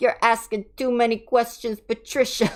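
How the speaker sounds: loud, atrocious put-on Italian mobster accent. Retelling a group chat game of playing mobsters: bad Italian mobster accent. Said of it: "we just broke into Italian mobsters".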